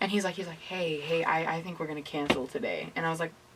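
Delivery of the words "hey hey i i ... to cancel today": quiet, subdued, shaky, unsteady murmur. Retelling a friend's phone call cancelling the day: imitating a quiet, shaky voice. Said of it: "kinda quiet and, like, sh-, it's a little shaky".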